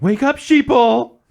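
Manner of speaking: very high, very loud, awful-voiced yell. Mocking a person who would say sheeple: mock yelling in the worst voice.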